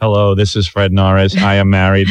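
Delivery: loud, detached, otherworldly alien voice. Retelling a phone message, sounding like a guy from another planet. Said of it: "it was like a guy from another planet".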